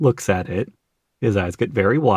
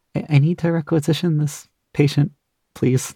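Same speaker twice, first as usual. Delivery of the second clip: very gentle, mild tone, pitched up; 6 semitones higher than usual. Voicing the inspector asking an orderly for a patient: very quiet voice. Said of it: "in the quietest voice the inspector has probably ever".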